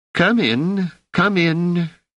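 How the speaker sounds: put-on very high-pitched old woman voice. A wrinkled woman welcomes visitors in; soft, high-pitched voice. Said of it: "in a soft, high-pitched voice".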